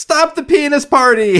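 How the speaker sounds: loud high-pitched screaming.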